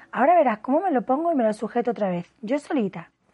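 ordinary delivery

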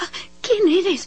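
frightened, trembling quaver, very high-pitched. A frightened girl who has never seen a man asks, trembling. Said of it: "preguntó temblorosa".

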